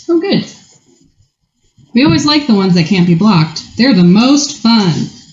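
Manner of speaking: dry, swooping, sing-song sarcastic enthusiasm. Reacting to an opponent's unblockable creature in a card game: sarcastic tone. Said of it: "I hope you can hear the sarcasm in my voice".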